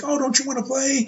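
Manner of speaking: sweet, sunny voice. Describing a wrestling character, imitating him acting all happy. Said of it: "he's all happy".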